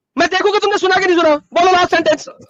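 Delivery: angry, loud shouting over someone.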